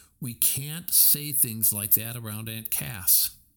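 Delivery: ordinary delivery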